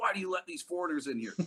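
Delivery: imitated yelling. Retelling how a man at a restaurant yelled at the waitress: imitating someone yelling. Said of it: "he was yelling at the waitress".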